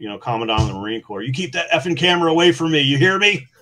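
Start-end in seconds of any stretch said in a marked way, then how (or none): 1.2-3.4 all-out loud, shrill screaming. Retelling screaming at the Commandant of the Marine Corps, retelling own screaming. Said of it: "So I just start screaming at the Marine".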